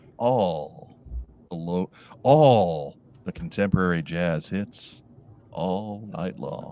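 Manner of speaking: late-night radio DJ announcer voice. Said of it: "this was the voice I used".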